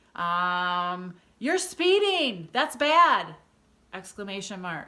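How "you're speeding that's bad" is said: very high, very loud, slow, swooping scolding yell. Speaker demonstrating an exclamation-mark sentence with a scolding yell. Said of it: "You're yelling at someone".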